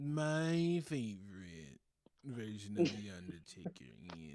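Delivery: put-on half-asleep voice. Mocking another speaker's words: imitating a half-asleep voice. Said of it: "You sound like you're half asleep".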